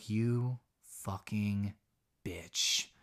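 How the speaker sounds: low, hushed, very quiet half-whisper. Recapping a story, quoting what one character half-whispers to another, imitating a half-whisper. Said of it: "Nick just whispers to her".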